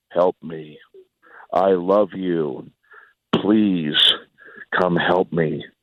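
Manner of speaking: low, slow, flat, toneless monotone calling out. Retelling what a strange voice called out to them: flat monotone voice. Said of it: "very monotone voice was".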